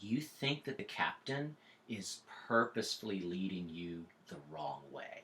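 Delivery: low-pitched, creepy half-whisper. Game master retelling a hint half-whispered to one player; retelling a creepy half-whisper. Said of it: "I just whispered across to them".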